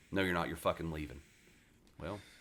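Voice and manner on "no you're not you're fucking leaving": normal talking voice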